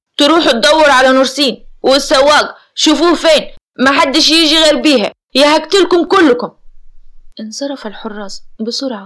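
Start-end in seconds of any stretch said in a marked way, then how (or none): 0.2-6.5 enraged, furious, raised voice. A man gives orders to his guards, furious. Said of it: "عامر بغضب شديد".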